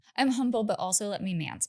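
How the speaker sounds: ordinary talk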